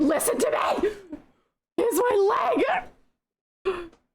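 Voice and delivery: furious, enraged outburst climbing to very high pitch. Speaker acts out a man who has had enough, retelling an enraged outburst. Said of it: "he does it in rage".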